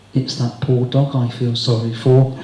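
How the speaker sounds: mock muttering under breath. Retelling a parting remark at the door: imitating muttering under her breath. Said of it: "under her breath, but loud enough for us to hear".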